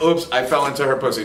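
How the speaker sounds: normal talking voice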